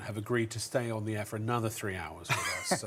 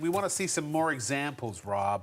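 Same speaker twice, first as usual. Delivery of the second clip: embellished, fake, put-on American accent; 4 semitones higher than usual. Retelling what viewers ask for, embellishing it: put-on american accent. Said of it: "but they haven't said it in an American accent".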